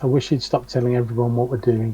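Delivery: muttered under breath. A player speaks in character during a role-playing scene, muttering under breath. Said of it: "Arwen's going to say under his breath".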